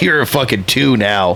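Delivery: ordinary talk, nothing marked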